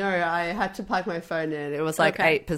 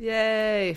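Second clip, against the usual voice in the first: fake-sounding, unconvincingly enthusiastic yay; 3 semitones higher than usual. Answering a list of upcoming films: fake-sounding yay. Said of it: "That sounded so fake".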